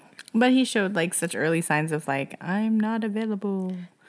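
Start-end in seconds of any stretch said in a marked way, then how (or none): 2.4-3.8 spooky, ghost-like delivery. Speaker quotes a man's early signs of being unavailable, in a ghostly voice. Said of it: "The way you said that, like a ghost".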